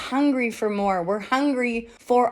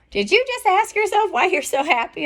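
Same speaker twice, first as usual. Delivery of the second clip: play-acted high child voice, yelling; 8 semitones higher, 3 dB louder than usual. Retelling a child calling out from their room: imitating a kid yelling out. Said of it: "one of them yelled out".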